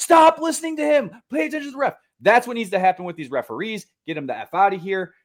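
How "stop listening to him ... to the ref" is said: very high, put-on fed-up exasperated yell. Coach recalls what he yells at his kids during games, retelling a yell. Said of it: "I'm yelling at my kids".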